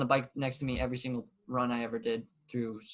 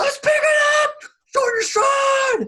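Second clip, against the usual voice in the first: yell, much higher and louder than normal; 14 dB louder than usual. A coach re-enacts calling instructions to runners across the track, retelling a coach's yell. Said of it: "You'll hear me across the track".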